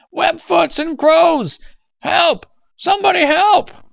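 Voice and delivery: very loud, very high, shrill shrieking in rage. Narrator reads an old man's cries as he chases two figures through a park, screaming at top of his lungs. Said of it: "He was screaming at the top of his lungs".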